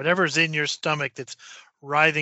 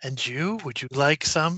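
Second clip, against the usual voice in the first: almost purring, purr-like tone. Game narrator voicing her as she offers a drink to a player, almost purring. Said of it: "it's almost purring".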